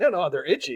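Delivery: ordinary talk, nothing marked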